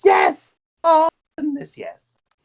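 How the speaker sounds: pure joy, squeaked very high. Invited to arm wrestle by a new friend, answering with an absolute expression of joy. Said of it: "an absolute expression of joy".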